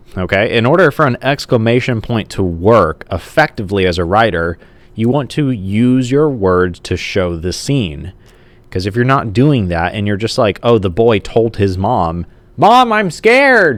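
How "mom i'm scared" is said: loud, very high, full-voiced cry. Explaining exclamation points to writers, voicing a boy telling his mom, loud voice. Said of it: "like in a loud voice".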